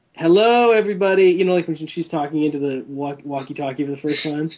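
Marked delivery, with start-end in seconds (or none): 0.2-1.3 put-on little-girl cartoon voice, much higher. Quoting how the speaker's sister would say a walkie-talkie line, in a Sally Brown-like voice. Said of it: "whose voice reminds me of Charlie Brown's sister".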